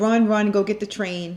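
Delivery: ordinary delivery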